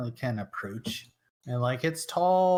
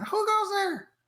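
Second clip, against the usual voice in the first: squeaky, very high-pitched little gnome voice. Game master voicing gnomes calling out to an approaching player, super high-pitched gnome voice. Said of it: "super high pitched voice".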